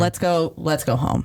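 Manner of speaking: ordinary talk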